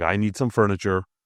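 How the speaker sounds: usual speaking voice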